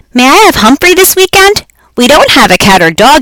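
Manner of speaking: big, loud, high-pitched bellowing shout. A boy called on in class asks his teacher a question; bellowing. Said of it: "he bellowed".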